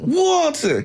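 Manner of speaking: high, hysterical, laughing squeal. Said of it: "she's dying laughing, but she's hysterical".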